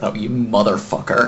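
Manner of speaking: muttering under breath. Reacting in character to a companion's missing tongue, muttering under breath. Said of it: "Just kinda mutter under my breath".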